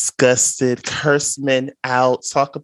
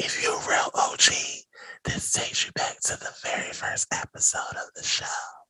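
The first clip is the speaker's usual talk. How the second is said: hushed whisper, quieter. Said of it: "I'ma whisper it 'cause y'all might yell".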